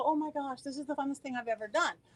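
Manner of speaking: ordinary talk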